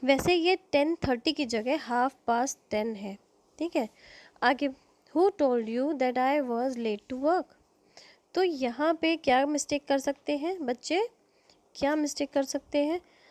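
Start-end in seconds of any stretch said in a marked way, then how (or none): 4.7-7.4 very slow, careful, precise read-aloud like dictation. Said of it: "पांच sentences मैंने दिए हैं".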